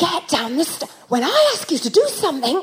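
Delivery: hushed whisper. Retelling telling Daisy to get down the stairs, retelling a whisper. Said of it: "and I'm whispering still".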